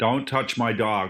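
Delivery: put-on American accent. Asked on the spot to do an easy accent, in an American accent. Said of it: "Can you do an American accent?".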